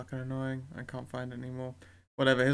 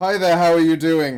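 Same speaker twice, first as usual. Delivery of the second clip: put-on loud, belted-out British accent; 4 semitones higher, 15 dB louder than usual. Showing how the polite voodoo man sounds: british accent. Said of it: "He sounds like a British person speaking".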